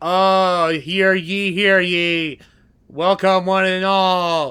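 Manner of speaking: strained, reluctant forced cheer, very slow, "ye" drawn out. Voicing b, who is not enthused to be here, b forcing enthusiasm. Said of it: "she's trying to do her best to be enthused".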